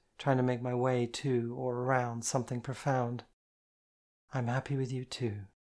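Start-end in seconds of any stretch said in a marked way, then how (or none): 4.3-5.5 sweet, sweetly spoken tone. A woman answers the narrator, who has told her he is happy; said sweetly. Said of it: "she said sweetly".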